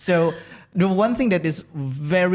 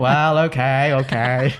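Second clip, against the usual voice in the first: put-on American accent, lower; 3 semitones lower than usual. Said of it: "Is that American accent?".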